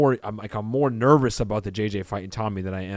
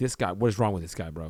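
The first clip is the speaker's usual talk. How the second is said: fed-up, annoyed, exasperated tone; 2 semitones lower, 4 dB quieter than usual. Imitating the lie detector examiner reacting to a guess: imitating an unhappy examiner. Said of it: "this guy is not happy".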